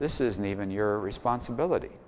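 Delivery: ordinary delivery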